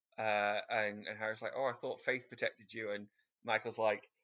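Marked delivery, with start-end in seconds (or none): none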